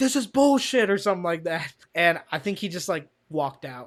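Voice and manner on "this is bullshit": shrill, very high, loud screaming. Retelling how a coworker was heard quitting: imitating Terry screaming. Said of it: "we heard fucking Terry screaming".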